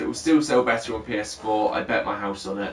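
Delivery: plain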